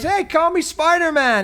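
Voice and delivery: put-on high, slow, eager kid voice.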